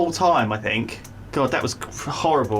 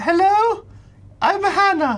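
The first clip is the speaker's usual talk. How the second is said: very high, put-on girly voice; 14 semitones higher, 4 dB louder than usual. Recounting getting into character as Hannah, using a playing Hannah, girl's voice. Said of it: "I've had to put on like a girl's voice".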